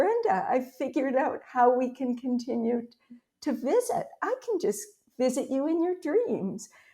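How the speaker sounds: eager, excited, lit-up delivery with swooping pitch. Retelling what a late friend said in a dream: imitating an excited voice.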